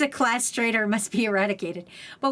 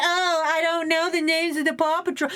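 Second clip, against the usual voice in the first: mocking put-on cool voice, pitched higher; 6 semitones higher than usual. Mocking someone who pretends not to know Paw Patrol: imitating Quattro acting cool. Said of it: "pretending to be cool like Quattro".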